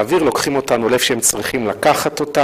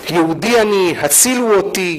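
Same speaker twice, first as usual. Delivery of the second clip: put-on, heavy, thick Arabic accent; 5 semitones higher than usual. Describing voices heard speaking biblical hebrew, the speaker imitates one in a heavy arabic accent. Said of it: "במבטא ערבי כבד".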